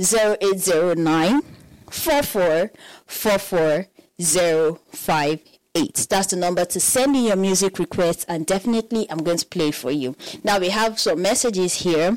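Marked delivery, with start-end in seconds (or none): 0.0-6.1 very slow, deliberate, digit-by-digit delivery. Host repeating the music-request number for listeners, saying it slowly. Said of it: "let me say it slowly this time".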